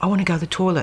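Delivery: put-on croaky voice. Telling how he finally woke after twelve days, imitating Liam's croaky voice. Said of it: "he had a really croaky voice".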